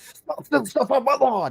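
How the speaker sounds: very high, shrill, loud yelling scream. Asking if an angry person would scream at thieves: imitating a scream. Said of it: "scream about it".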